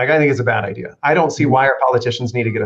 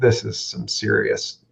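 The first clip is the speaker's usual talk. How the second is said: put-on muttering under breath, quiet, quieter; 3 semitones lower, 5 dB quieter than usual. Retelling what a coworker said during a training: imitating muttering under his breath. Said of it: "at one point under his breath".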